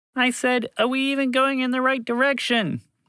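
very high, loud shout. Reading a story, voicing a mouse repeating a question: shouting over the wind. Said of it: "Montgomery the Mouse shouted".

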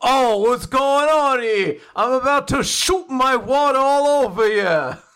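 put-on loud, slow Brooklyn accent. Describing a character's Brooklyn accent, then quoting him; Andy's Brooklyn accent. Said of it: "Andy has a Brooklyn accent".

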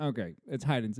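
usual speaking voice

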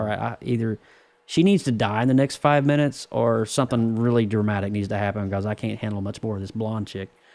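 ordinary delivery

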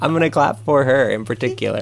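speech through laughter.

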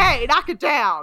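put-on just-woken suburban mom voice. Retelling how a man reacted to a fight around him, imitating a woken suburban mom. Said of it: "as if he is a suburban mom".

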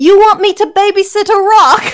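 put-on weird, high-pitched, Cockney-accented bat voice.

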